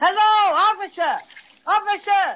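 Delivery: big, high, bellowing yell. A character takes over calling out to a distant policeman: big yelling voice. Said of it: "It takes a big voice like mine to do the trick".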